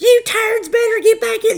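put-on loud, high, shrill scream in rural Alabama accent. Retelling a night of paintballs, Megan yelling at them from her porch: imitating Megan's yell. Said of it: "she's yelling at us like".

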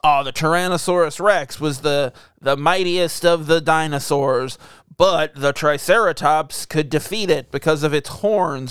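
plain

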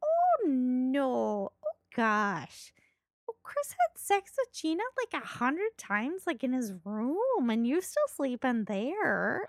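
put-on swooping, sing-song Minnesota accent, drawn-out "no". Retelling what a woman from minnesota said to her, minnesota accent impression. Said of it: "so that's where this impression comes from".

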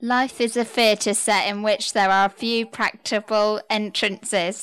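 very loud, rushed reading aloud. A player in a game reading a sentence as quickly as possible, really loud. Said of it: "You did get really loud".

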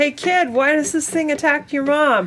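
shrill, very high-pitched shout. A player's character calls out to a teenager running down the street, shouting. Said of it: "Kind of shouts and says".

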